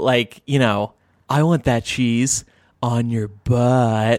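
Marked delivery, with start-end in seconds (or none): 1.3-4.2 joking, mock-seductive, sexy whisper. Showing how they tease their partner with goofy dirty talk, mock-sexy whisper. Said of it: "I lean in and whisper it really sexy".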